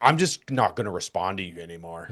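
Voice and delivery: mocking, petulant, sulky child voice. Retelling what an older fan said: imitating a petulant child. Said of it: "looked straight like a fucking petulant child".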